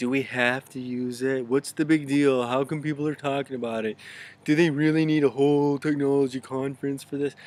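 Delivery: put-on mocking tone, loud. Voicing the doubts of people hesitant to go digital: mocking voice. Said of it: "I kind of used a mocking voice right there".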